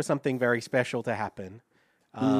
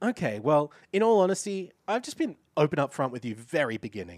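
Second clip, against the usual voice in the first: play-acted, aggrieved, put-out, moody tone; 2 semitones higher than usual. Quoting a man's reply to an accusation: imitating a moody, upset tone. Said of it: "he responds with this very moody tone".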